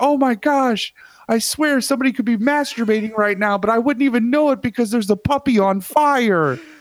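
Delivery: very high distressed voice, "fire" drawn out. Describing the Distractinator infomercial bit, speaker plays a distressed citizen. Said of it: "I kind of play the distressed citizen".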